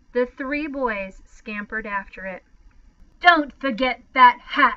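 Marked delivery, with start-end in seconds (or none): 3.2-4.8 loud, sharp, curt snapping. Patrick Edward's mother orders the three boys after their things: snapped. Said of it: "she snapped".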